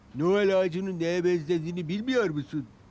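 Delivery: said with a laugh. One engine asks another who can't find the tree, laughing. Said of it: "Diye güldü Duncan".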